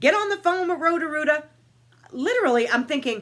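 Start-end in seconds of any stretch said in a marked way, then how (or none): 0.0-1.4 loud, high-pitched, shrieking scream. Retelling her husband's demand to call a plumber: imitating husband screaming. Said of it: "He's screaming".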